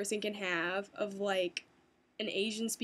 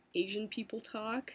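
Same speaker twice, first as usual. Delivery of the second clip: normal talking voice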